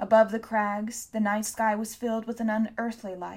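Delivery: ordinary delivery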